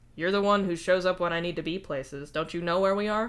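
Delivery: ordinary delivery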